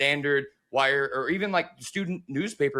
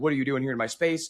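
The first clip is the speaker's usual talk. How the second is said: put-on scowling, annoyed voice. Retelling how a reporter scowled at a photographer: imitating Ken Rosenthal scowling. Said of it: "he kinda scowls at him, like".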